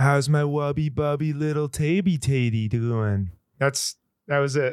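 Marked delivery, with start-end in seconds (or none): 0.0-3.3 put-on sweet, cooing baby talk. Asked for the best Aiden impression, doing the Tater Talk bit: Aiden impression in baby talk. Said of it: "You do the best Aiden impression".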